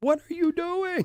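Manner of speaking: put-on very high, loud screaming outburst. Retelling how she screamed at the television during a football game, imitating someone screaming. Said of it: "she's screaming at the television".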